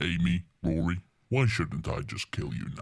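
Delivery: very low, deep, grave voice with weighty gravitas. The speaker performs a line addressed to two characters in a House voice. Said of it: "You're doing a good house".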